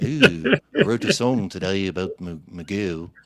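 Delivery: put-on low swooping Liverpool accent. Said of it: "purely [name]'s accent, where he's like".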